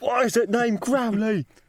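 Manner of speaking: pushy, aggressive, very high-pitched grilling tone. Voicing Jack as he questions a stable boy, Jack aggressively demanding. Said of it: "aggressively asking a stable boy".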